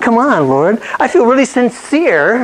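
heartfelt, overwrought pleading, high and very emotional. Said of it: "Very emotional".

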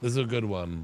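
plain reading voice

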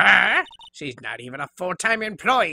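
put-on raspy old-lady voice. In a game, an old lady reacts to hearing the studio assistant complained, raspy old-lady voice. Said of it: "and it's a crying shame that you use today to say what you please about poor old ladies. ... But her voice is the reason I, right now, am raspy. I am now allowing all of the stress from this recording to hit my voice because I no longer need it. And it is almost entirely from that bitch".

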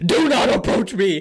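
loud, high scream like a lunatic. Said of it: "start screaming like a fucking lunatic".

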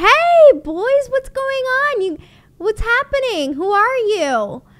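high, loud, bubbly voice.

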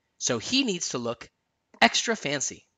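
plain

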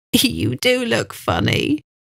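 giggling throughout, sing-song and slow. Bella reacts to Joe after his desk broke and he fell over; giggling. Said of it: "Bella giggled".

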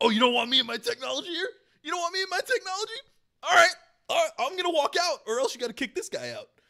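very high, very loud, angry shouting. Retelling how a man at a conference acted, mock yelling at everybody. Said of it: "started yelling at everybody".

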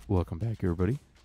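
soothing public-radio announcer cadence. Joking about calming down while playing: soothing NPR cadence. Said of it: "a soothing N P R cadence again".

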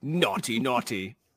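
mock British accent. Joking with co-hosts on a podcast, mock british accent. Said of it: "I like how you guys turned British".

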